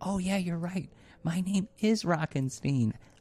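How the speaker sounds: whispering. In a role-play scene, a character whispers back to the other player. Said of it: "he whispers back to you".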